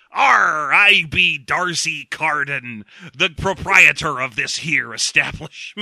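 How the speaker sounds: slow, fake, pirate-like Welsh accent. Retelling a movie scene where a man introduces himself: piratical Welsh accent. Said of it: "he's doing that piratical Welsh".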